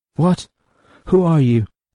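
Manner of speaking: high, stumbling, broken-up stammer. A tinker faces warriors glaring at him: stammering. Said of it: "the tinker stammered".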